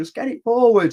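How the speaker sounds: impatient shout, high-pitched and loud.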